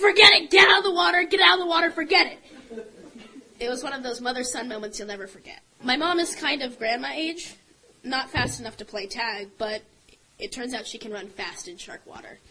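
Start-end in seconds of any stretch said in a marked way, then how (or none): 0.0-2.9 frantic, shrill, very loud scream. Retelling a mother urging her son out of shark water: imitating a mother's scream. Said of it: "But she screamed".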